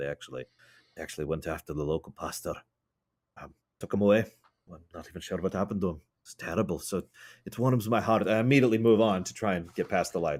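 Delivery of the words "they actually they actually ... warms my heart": lowered conspiratorial voice, lower and quieter. Playing a character telling a tale of raiders: low conspiratorial tone. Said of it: "lean in and lower my tone a little bit".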